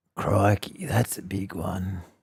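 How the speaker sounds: slow, old put-on voice. Imagining what an older Steve Irwin would sound like doing voiceovers: old, slowed-down Steve Irwin voice. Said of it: "he'd have to slow down a little bit because he's being a bit old".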